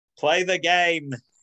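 put-on Stoke-on-Trent accent. Retelling what a fan shouted, in a classic Stokey voice. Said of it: "in a classic Stokey voice".

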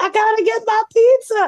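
stretched-out, very high, drawn-out shriek. Retelling running a red light while rushing home for pizza: retelling own screaming. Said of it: "then I started screaming".

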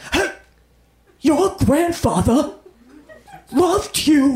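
slow, mock-menacing grandmother voice. Imitating a grandmother whose every line sounds like a threat: imitating grandmother sounding threatening. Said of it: "everything they say sounds like a threat".

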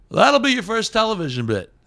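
very high, swooping, shrill, sing-song bad comedian voice. Retelling a comedian's advice in the green room: bad Jerry Seinfeld impression. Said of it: "That's my bad Jerry Seinfeld impression".

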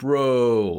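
loud, stretched-out, drawn-out frat-guy bro voice. Retelling how the fraternity used to talk: imitating past self as a frat bro. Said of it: "We'd be like".

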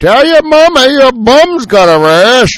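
put-on very loud, high, shrill, booming old-fashioned movie actor voice. Repeating a line he delivered on a shoot, in an old-timey actor voice. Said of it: "you went all like oldie timey actor there".

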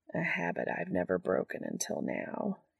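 low, breathy murmur, almost a whisper. Replying to the other man's thanks, murmured. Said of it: "he murmurs".

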